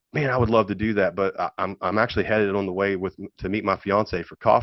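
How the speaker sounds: ordinary talk, nothing marked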